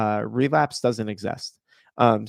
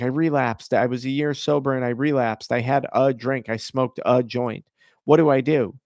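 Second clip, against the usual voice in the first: normal talking voice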